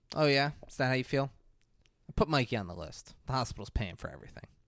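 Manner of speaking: as smug and self-satisfied as can be. Retelling a character's reply to a refusal: imitating a smug retort. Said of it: "about as smugly as she could have done it".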